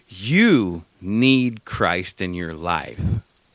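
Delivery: dead-serious, slow delivery. Retelling what a man said after staring at him: imitating someone dead serious. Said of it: "he was dead ass serious".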